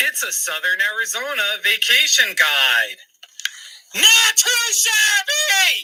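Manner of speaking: theatrical, dramatic, rising voice that squeaks. Speaker replaying her own read of a vacation guide line, dramatic with voice squeaking. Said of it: "My voice squeaked in that one".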